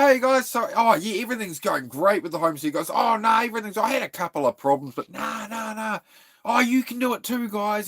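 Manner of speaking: very high, fake-cheerful, gushing vlogger-style voice. Mocking channels that act like everything's great: imitating fake-cheerful YouTubers. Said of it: "one of these channels that's on here like this".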